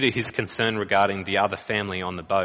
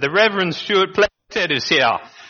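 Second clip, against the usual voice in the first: mock hearty, jovial, very high and loud; 10 semitones higher, 7 dB louder than usual. Announcing himself at a hospital curtain, retold afterwards: retelling a jovial greeting. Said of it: "in my jovial voice".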